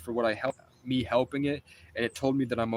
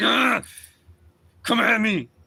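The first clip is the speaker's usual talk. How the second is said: very slow, drawn-out, raised scream; 9 semitones higher, 8 dB louder than usual. Speaker retells slamming a mile marker down, re-enacting his own scream. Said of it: "I'm screaming like".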